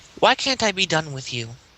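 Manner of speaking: confiding, secretive, close tone. Confronting a cultist leaning casually against a box, in a hushed tone. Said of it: "I say in a hushed tone".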